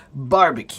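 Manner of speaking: barbecue with the first syllable bar- stressed. Correcting a pronunciation, stress on first syllable of barbecue. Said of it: "So the accent is on the first part".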